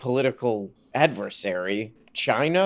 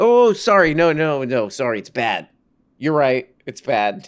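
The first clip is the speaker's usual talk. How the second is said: mock apologetic tone, louder; 5 dB louder than usual. Retelling how a TV guest backed down when challenged: imitating someone apologizing. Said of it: "And he's like".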